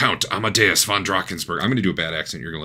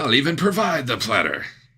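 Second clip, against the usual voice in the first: high, fake put-on French accent; 7 semitones higher than usual. Narrating a scene to the group, voicing a character in a pseudo french accent. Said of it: "It's a pseudo French accent".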